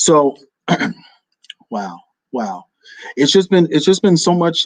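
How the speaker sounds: voice catching, choking up with emotion. Speaker announcing the last episode and thanking listeners: choking up. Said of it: "I said I wasn't. Sorry".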